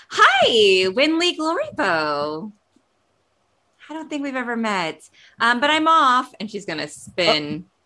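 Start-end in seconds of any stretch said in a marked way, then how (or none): 0.1-6.3 extra perky, bubbly, high and loud. A character looks up, greets someone, then hurries off, perkier than ever. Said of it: "look up and perkier than ever".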